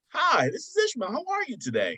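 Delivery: very high, sing-song customer service voice. A health insurance worker shows the voice he uses with customers: customer service voice. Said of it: "customer service voice".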